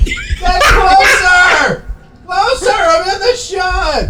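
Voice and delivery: very high, slow, laughing yell.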